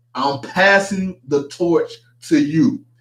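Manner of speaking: plain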